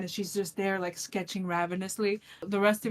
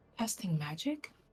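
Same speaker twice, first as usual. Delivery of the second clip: soft, hushed, very quiet stage whisper, right up close; 8 dB quieter than usual. Voicing a character who leans in close to a spellcaster: half-whispering very quietly. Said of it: "she whispers very quietly to you".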